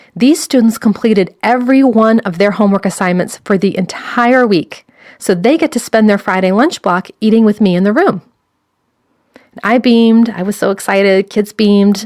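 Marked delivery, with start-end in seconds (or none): none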